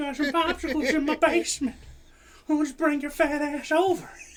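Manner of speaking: high, creepy, coaxing voice. Joking about a creepy pervert neighbor: Herbert the pervert voice. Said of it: "Herbert the pervert?".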